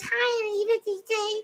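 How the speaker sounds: put-on very high, squeaky little girl voice. Telling a club story, the speaker imitates a girl who came up, squeaky voice. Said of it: "I'm gonna imitate this voice".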